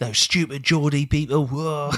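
put-on London-accented villain voice. Repeating the imitation of the rival's reaction: East End accent. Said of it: "he sounds like he's from the East End".

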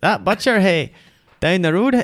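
accent from Ballymena. Showing another speaker how a Ballymena accent should go: Ballymena accent. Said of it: "that more like a Ballymena accent".

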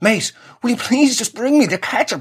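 mock exasperated, fed-up tone. Retelling asking him again to bring the ketchup, acting angry. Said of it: "I'm getting so bloody angry".

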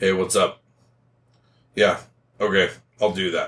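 mock cold, distant, detached, uninvolved tone. Imitating a partner answering the phone: imitating a cold, detached partner. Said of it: "they're very cold and detached".

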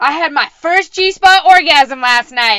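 loud, high-pitched yell. Retelling what a friend blurted out on walking in: imitating someone yelling. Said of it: "That's what she yelled".

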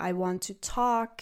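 ordinary delivery

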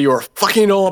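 high, put-on French accent in English. Retelling hearing someone at a venue start to say this, French accent. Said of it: "heard somebody in a French accent starting to say".

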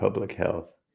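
acted muttering under the breath. Retelling a teacher's scoffing reply: imitating words muttered under the breath. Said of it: "and under his breath, he said".

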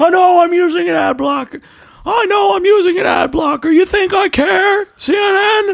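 bad put-on voice, pitched very high. Repeating the other speaker's line as a bad Jerry Seinfeld impression. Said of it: "you kinda sound like Jerry Seinfeld".

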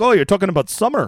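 put-on botched Minnesota accent. Imagining what someone living in Minnesota would say, failed Minnesota accent. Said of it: "why are you Irish?".

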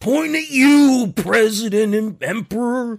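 put-on wrestling promo shouting.

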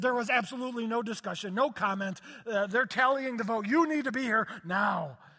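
loud, frantic, freaked-out urgent delivery. Retelling a phone call from a caller who was freaking out: imitating Darcy freaking out. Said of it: "she was freaking".

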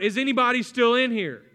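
loud searching yell, calling out. Telling how a man ran back into the smoke, imitating someone yelling out. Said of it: "he starts yelling out".

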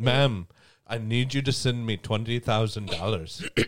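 impression of an Indian accent. Asked to do the voice they're known for, speaker performs it: Indian accent. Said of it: "That's racist. Not every Indian is".

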